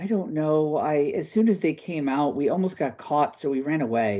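put-on shy, sheepish, bashful boy voice. The narrator voices a boy asked how many bandits he saw: bashful boy. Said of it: "He looks rather bashful at you".

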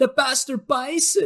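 put-on very high, almost girlish, super high-pitched dubbed voice. Showing a friend how he says it in the original, imitating a super high-pitched dubbed voice. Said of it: "his voice is super high-pitched".

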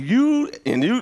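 acted-out, high-pitched screaming. Retelling a man in an overcoat yelling at two store workers: imitating a man screaming. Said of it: "He's screaming at these two workers".

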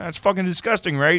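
very high-pitched cartoon frog voice. Retelling a puppet video, voicing the frog puppet: Kermit voice. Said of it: "Kermit goes".

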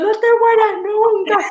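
very high, tearful crying yell. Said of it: "Yo le grité a [name] llorando".

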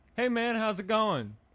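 high, loud, cheery, breezy mock tone.

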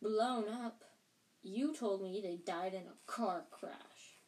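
ordinary delivery, nothing marked

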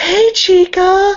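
put-on very high, loud, airheaded ditzy girly voice. Retelling how a classmate greets every girl, imitating a ditzy girl. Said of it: "she's really ditzy".

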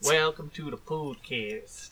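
really bad put-on Southern drawl. Imitating a guy being discussed, with a really bad southern drawl. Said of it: "Just with a really bad southern drawl".

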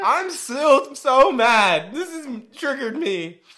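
voice cracking. Speaker talking about a canceled show, voice cracking. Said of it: "my voice cracking".

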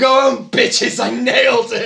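loud, high, drawn-out shout. Retelling a cartoon scene where a character leaves an audition: imitating Roger Smith shouting. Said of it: "just shouts out".

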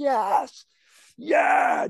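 mock gleeful cheer, squealed out very high and thrilled. Speaker walks over to him at the game, retelling a scream. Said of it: "I'm just like screaming".

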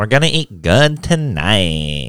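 bad put-on, sing-song Valley Girl accent. Asked what that was, repeating the line: bad put-on Valley Girl accent. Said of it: "The Valley Girl one I have?".

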